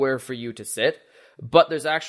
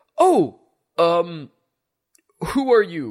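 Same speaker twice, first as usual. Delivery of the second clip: very slow, swooping character voice, drawn out, pitch roaming; 4 semitones higher, 5 dB louder than usual. Voicing Gregory at the bar asking who the newcomer is: Gregory's character voice. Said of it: "if I forgot his voice".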